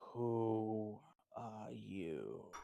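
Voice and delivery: very low, rough creature voice, drawn-out "who". A storyteller voices a creature questioning a spirit, very low, rough voice. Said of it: "very low and with a very rough voice".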